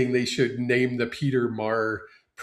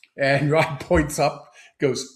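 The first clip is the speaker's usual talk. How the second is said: normal talking voice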